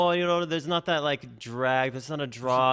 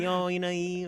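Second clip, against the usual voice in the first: put-on Tennessee drawl, stretched e, higher; 4 semitones higher than usual. Showing how Tennessee speakers stretch the E: drawled Tennessee accent, stretched E. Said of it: "drawl out, like, the E a little bit".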